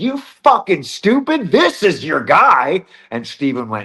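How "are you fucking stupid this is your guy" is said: very high, shrill, swooping, all-out top-of-lungs shouting. Retelling a moment in a backstage room: imitating someone yelling at full volume. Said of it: "just yelled at the top of the lungs".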